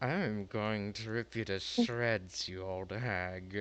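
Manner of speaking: words forced out through clenched jaw and gritted teeth. Threatening a rival in character: through gritted teeth. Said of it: "This gritted smile in his teeth".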